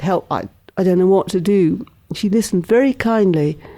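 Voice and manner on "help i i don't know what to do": ordinary delivery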